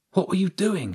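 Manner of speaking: hissed, pitched very high. A girl confronts a boy she had to sneak back in to let out, hissed. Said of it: "she hissed".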